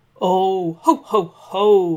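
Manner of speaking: loud, slow, very drawn-out, uneasy nervous chuckle. Santa answers the dragon who asked for a gift: nervous laugh. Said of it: "laughed Santa nervously".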